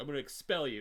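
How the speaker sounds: threatening voice. Retelling a movie scene: imitating a threatening principal. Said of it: "being very threatening towards them".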